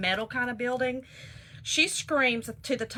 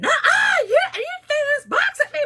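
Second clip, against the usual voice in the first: put-on old lady scream, higher and louder; 8 dB louder than usual. Retelling a quarrel, imitating the elderly lady screaming. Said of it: "the elderly lady screaming".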